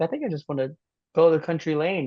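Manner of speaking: ordinary delivery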